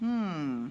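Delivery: ordinary delivery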